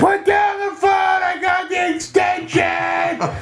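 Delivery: loud yelling. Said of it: "you had to yell at your parents".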